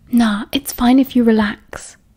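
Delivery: ordinary delivery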